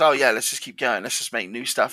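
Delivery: ordinary delivery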